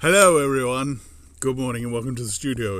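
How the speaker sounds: speaking with water in mouth. Greeting everyone at the start of the show, with a mouthful of water. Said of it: "is what I just said with a mouthful of water".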